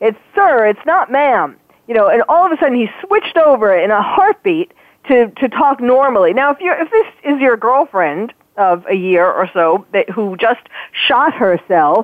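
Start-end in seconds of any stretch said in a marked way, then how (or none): 0.0-1.6 indignant, irate, in a masculine voice. Quoting a man who switched back to his regular voice, retelling an irate retort. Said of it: "he was so irate".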